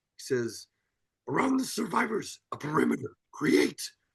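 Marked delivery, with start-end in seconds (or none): 1.3-3.8 put-on croaky, high-pitched voice like a tiny old creature. Praising the ending of Attack of the Clones, the speaker quotes a favourite line: Yoda impression. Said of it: "That was a banging Yoda impression".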